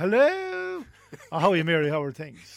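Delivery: put-on telephone voice. Describing how people tense up on stage, imitating a mother's phone voice. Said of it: "what I call my mother's phone voice".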